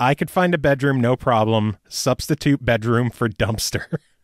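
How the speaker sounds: usual speaking voice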